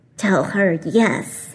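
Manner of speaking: rough, grating, gravel-edged voice. Narrating a story, a voice speaks to Ella while Ashley calls from upstairs, gravelly. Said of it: "the gravelly voice continued".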